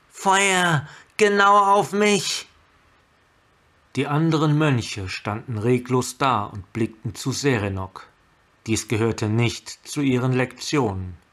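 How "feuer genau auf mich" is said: loud, slow, drawn-out calling out. Landing on a rock floe, she turns and waves to the monks, calling out. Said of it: "rief sie".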